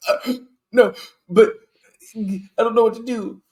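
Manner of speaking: helpless panic, high and loud.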